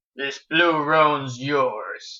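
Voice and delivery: slow, low, growling cowboy voice.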